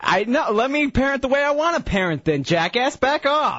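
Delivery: angry snapping voice.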